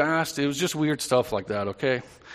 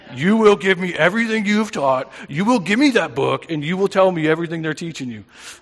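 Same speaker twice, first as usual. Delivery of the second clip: serious, stern, raised fatherly voice; 3 semitones higher, 6 dB louder than usual. Retell a call you got later that night, imitating Jim's serious dad voice. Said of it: "in his serious dad voice".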